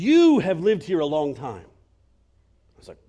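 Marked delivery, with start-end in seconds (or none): 0.0-1.6 cross, angry voice. Retelling what a market seller said: imitating an angry voice. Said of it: "with an angry voice".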